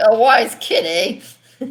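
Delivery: very slow, bad, drawled New Jersey mobster accent. Retelling a line of Zuko from an old film: imitating Zuko as a bad New Jersey stereotype. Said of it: "he's like a bad New Jersey stereotype".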